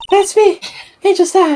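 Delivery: very high, put-on girly voice. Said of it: "You sound like Cartman pretending to be a girl".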